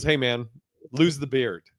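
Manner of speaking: grave, dead-serious delivery. Retelling advice given in the green room: imitating someone speaking very seriously. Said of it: "very seriously".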